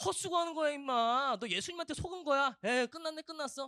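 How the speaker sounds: very loud, high-pitched, scornful jeering mockery. Acting out people mocking a blind man: imitating people mocking. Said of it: "지금 그런 말들 듣고 있는 거예요".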